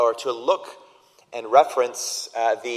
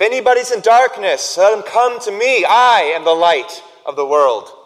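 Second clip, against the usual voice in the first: loud, high-pitched, proclaiming shout; 8 semitones higher, 8 dB louder than usual. Retelling a man standing up at a candlelight service, retelling a loud shout. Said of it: "just shouts with a loud voice".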